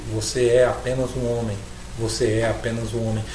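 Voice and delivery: low, soft murmur, as if close to the ear.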